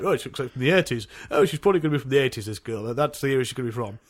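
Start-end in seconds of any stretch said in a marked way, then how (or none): none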